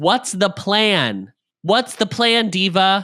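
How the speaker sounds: mock screaming. Retelling two characters arguing loudly with each other, retelling a scream. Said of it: "Just screaming at each other".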